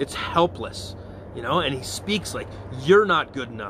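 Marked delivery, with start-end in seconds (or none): 2.8-3.7 put-on sharp voice, monkey- or devil-like. Speaker voices the devil's attack on listeners, in a sharp monkey voice. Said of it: "it's this sharp monkey voice".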